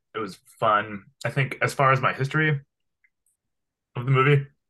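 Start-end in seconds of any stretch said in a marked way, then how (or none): 1.3-4.5 talking with mouth full, chewing. Discussing a Terminator movie, talking while eating a gummy bear. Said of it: "I'm eating a gummy bear. It's kind of hard to talk".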